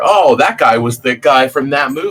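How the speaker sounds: normal talking voice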